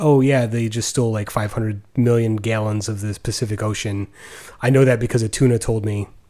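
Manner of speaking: normal talking voice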